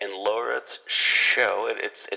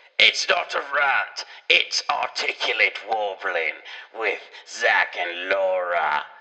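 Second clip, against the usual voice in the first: deliberately bad put-on British accent, slow. Proposing a show name, speaker says it in terrible put-on British accent. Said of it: "That is my terrible, terrible British accent".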